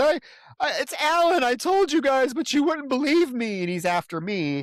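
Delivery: maniacal, high, shrieking scream. Retelling a film scene where a character finds a body: imitating Karen screaming. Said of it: "and she screams".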